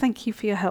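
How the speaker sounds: ordinary talk, nothing marked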